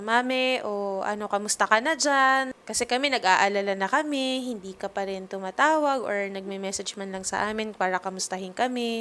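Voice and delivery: ordinary delivery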